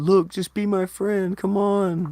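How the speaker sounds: very high, drawn-out desperate pleading. Imitating a woman trying to get someone to be her friend: imitating a desperate plea. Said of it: "a woman desperately trying to get someone to be cool".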